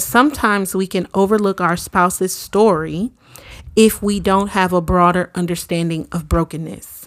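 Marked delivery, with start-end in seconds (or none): none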